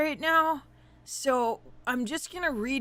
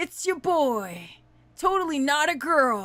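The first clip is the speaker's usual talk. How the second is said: fake boyish cartoon-style voice; 2 semitones higher than usual. Playing a boy for chat: weird Ash Ketchum voice. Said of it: "Doing a weird Cancer Ash Ketchum voice".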